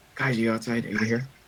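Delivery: whispering. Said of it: "He's whispering".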